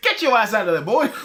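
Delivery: high-pitched, bossy, in-character call. Imagining the Spider-Sense as Leslie Jones warning Spider-Man: Leslie Jones voice. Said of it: "It's like Leslie Jones going like".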